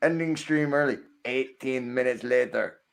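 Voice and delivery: cartoon time-card narrator voice. Reading a stream title aloud after being told to go ahead: SpongeBob narrator voice. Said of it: "you hear that in the SpongeBob voice".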